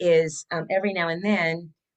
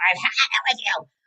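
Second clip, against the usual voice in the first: small fed-up, exasperated outburst, held in check; 3 semitones higher than usual. Showing what the scream sounds like: demonstrating a scream.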